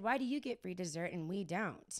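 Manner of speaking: normal talking voice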